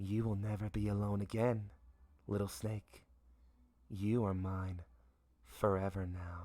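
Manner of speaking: gentle soft voice. A voice speaks into a character's mind, soft voice. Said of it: "a soft voice pierces his mind".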